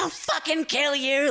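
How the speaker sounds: mock, high-pitched, raging screaming. Retelling a woman screaming at you out a window, mock screaming. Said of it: "screaming at me".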